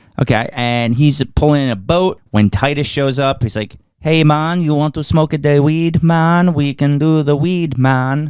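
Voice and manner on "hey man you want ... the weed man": cheap, discount put-on Jamaican accent. Retelling what a movie character says: imitating a jamaican accent. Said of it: "that was Jamaican".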